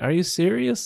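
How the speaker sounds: put-on yelling. Retelling yelling at a teacher while stuck on the floor: imitating own yelling. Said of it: "I was yelling at this lady".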